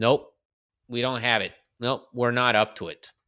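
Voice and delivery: ordinary delivery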